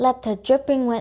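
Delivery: plain reading voice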